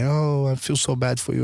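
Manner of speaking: acted, weepy, tearful, sobbing, crying voice. A father retelling his older daughter's reaction to his lost teeth; imitating someone crying. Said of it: "my older daughter starts to cry".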